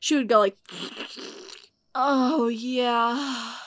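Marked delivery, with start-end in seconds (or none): 1.9-3.5 groaning, moaned words. Describing a woman on the toilet, imitating someone moaning. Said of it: "she is moaning".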